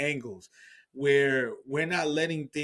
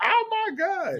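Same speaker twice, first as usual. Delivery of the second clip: mock shocked fan scream, very high; 4 dB louder than usual. Retelling how fans reacted to a shock, imitating fans screaming. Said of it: "just screaming at the top of their lungs".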